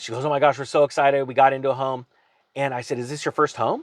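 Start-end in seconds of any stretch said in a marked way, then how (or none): 0.3-2.1 play-acted thrilled, bubbly, excited gushing. Retelling what a new homeowner told the speaker, retelling excited gushing. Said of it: "She went from excited".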